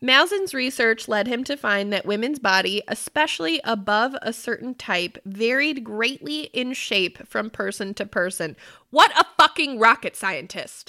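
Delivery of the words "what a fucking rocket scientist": fed-up, angry outburst with raised voice. Reacting to a researcher's finding while reading notes aloud: mad. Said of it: "I'm just so mad at this shit".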